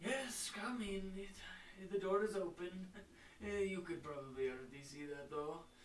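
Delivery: put-on elderly-sounding voice. The game master voices someone calling from inside after a door opens, older voice. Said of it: "you hear an older voice from inside".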